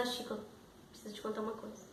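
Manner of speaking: ashamed, embarrassed, hushed confiding whisper. Retelling how an embarrassed woman came up to a man to talk, speaking softly. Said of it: "ela chega falando baixinho e diz".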